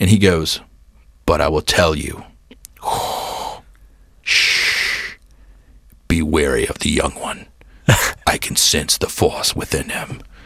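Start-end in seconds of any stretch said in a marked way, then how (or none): 1.3-10.2 slow, intense, breathy whisper, dead serious. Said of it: "he was super intense in character".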